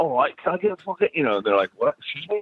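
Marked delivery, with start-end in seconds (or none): 0.0-1.1 put-on British accent, pitched up. Recalling ordering fish and chips in a fake accent: fake British accent. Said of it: "trying to order fish and chips with a with a fake accent".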